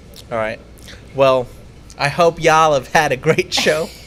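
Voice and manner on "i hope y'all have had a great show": poorly done put-on American accent. Host signing off at the end of the show, in a bad american accent. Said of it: "You really don't know how to do the American accent".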